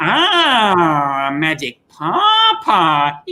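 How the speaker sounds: swooping puppet voice with drawn-out ah. Recalling a seventy-year-old man in a hospital bed telling a story, Raccoon voice. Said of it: "doing the voices".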